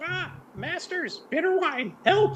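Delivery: very high, squawking raven voice. Voicing a raven asked who sent him: raven voice. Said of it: "how will the raven speak?".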